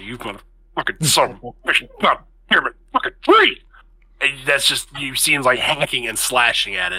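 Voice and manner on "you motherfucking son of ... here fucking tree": mock-angry muttering, slower pace. Recapping Adrian hacking and slashing at a tree: imitating Adrian muttering angrily. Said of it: "There's chuddering under his breath".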